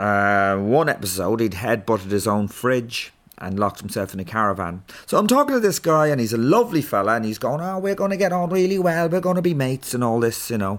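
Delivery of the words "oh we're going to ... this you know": put-on Scouse Liverpool accent on every word, pitched up. Retelling what a lovely fella said on meeting him, in a Liverpool accent. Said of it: "Sorry about the Liverpool accent there".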